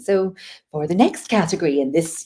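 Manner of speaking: slow, commanding awards-show announcer voice. Showing how awards announcements are done: awards announcer voice. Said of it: "I'll still do the awards announcement".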